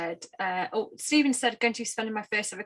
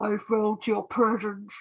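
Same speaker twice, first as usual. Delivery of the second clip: put-on villain voice. Telling a Christmas joke to the others: Darth Vader voice. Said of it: "Best Darth Vader impression ever".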